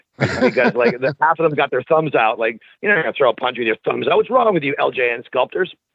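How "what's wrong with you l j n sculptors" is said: usual speaking voice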